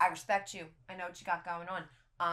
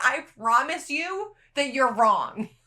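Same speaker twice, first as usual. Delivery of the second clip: loud, offended, insistent, indignant screaming; 6 semitones higher, 12 dB louder than usual. Retelling insisting to the doctors they were wrong: retelling her own scream. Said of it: "I remember screaming".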